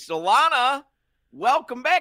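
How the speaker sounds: big, high, loud belted delivery.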